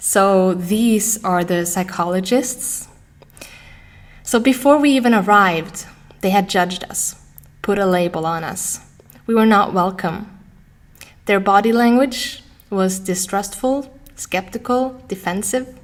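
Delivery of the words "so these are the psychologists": normal talking voice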